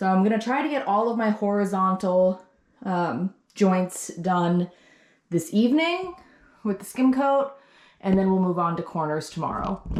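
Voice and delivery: breathless, winded voice, short of air. A pregnant speaker talks while working on a room, out of breath. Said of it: "I sound so out of breath".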